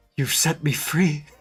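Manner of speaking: acted, put-on whisper. Acting out an imagined scene where he grabs you: acting out a whisper. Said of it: "grabs you and whispers".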